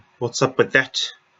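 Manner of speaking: fake, put-on New Zealand accent. Briefly reacting mid-discussion in a put-on new zealand accent. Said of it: "I don't know why I had to put on a New Zealand accent to uh, say what's up with that".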